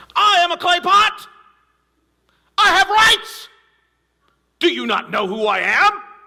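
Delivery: very high, shrill, indignant silly talking-pot voice. Speaker gives a clay pot a voice in an illustration, silly clay pot voice. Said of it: "When I say it that way, it sounds so silly".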